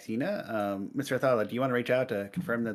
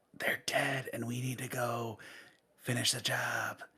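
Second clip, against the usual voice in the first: soft, hushed, secretive half-whisper; 5 dB quieter than usual. Voicing a character who pats off a companion's clothes: half-whispering.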